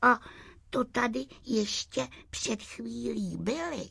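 unhappy soft half-whisper. Narrator reads the will-o'-the-wisp's line at the empty shells, half-whispering unhappily. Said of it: "šeptala nešťastně bludička Julie".

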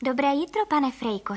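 usual speaking voice

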